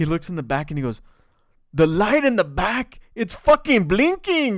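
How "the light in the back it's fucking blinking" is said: put-on accent from Bloomfield. Retelling a police chase, the speaker quotes a man in a Bloomfield accent. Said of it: "you gotta understand a Bloomfield accent".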